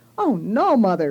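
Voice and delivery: protesting cry, crying out. Lee answers her mother's idea of signing up, cried out. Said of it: "cried my sister Lee".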